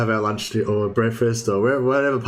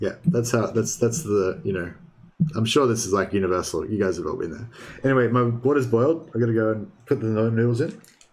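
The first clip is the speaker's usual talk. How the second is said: ordinary delivery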